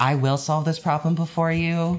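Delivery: uptight know-it-all voice, sounding like knowing better. Voice actor demonstrates the character Nia's voice: uptight Nia voice. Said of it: "Nia's voice is just sort of like uptight".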